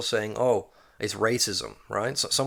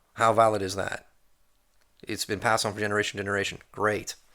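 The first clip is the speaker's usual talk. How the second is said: normal talking voice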